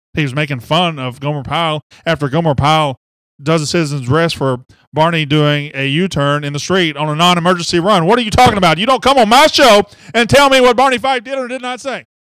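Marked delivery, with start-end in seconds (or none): 8.1-12.0 shrill, high, rapid, heated angry yelling. Host arguing with a guest on his show, angry yelling. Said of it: "stop yelling".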